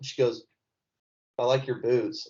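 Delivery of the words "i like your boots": ordinary delivery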